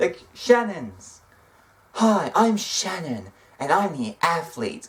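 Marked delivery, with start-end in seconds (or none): 1.9-4.9 mocking put-on impression voice. Reviewing people's self-introductions, quoting one she disliked, mocking Shannon's intro. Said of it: "Most of these sucked".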